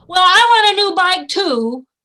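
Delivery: put-on very loud, bellowing, shouting child voice. A child at grandmother's tells another child a christmas wish: shouting. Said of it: "why are you shouting?".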